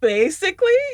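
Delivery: high voice rising in pitch.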